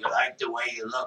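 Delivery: gravelly put-on advertisement announcer voice. Imitating the Men's Wearhouse ad spokesman: gravelly Men's Wearhouse ad voice. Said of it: "they had a gravelly voice".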